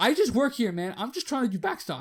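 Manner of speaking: high, loud, irritated voice.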